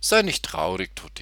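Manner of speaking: plain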